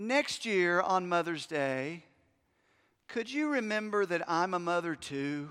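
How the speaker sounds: very calm, composed, soft-spoken voice. A husband quotes what his wife said at bedtime: imitating wife speaking calmly. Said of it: "very calmly said this".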